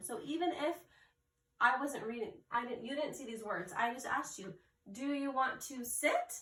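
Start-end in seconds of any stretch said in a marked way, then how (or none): 4.9-6.3 high rise at the end on sit. Explaining how a reader signals a question: rising pitch on sit. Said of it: "You can tell by my high-pitched, high-pitched voice at the end that it's a question".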